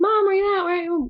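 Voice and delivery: high, searching calling-out voice. Retelling a book scene, a girl searching the house: calling out for mom. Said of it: "she's calling for her mom".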